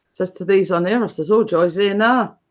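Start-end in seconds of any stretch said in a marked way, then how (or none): none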